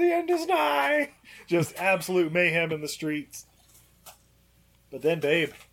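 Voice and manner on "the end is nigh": very high, drawn-out, frantic screaming. Describing street mayhem as the father goes nuts; imitating a father screaming. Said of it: "and he's screaming".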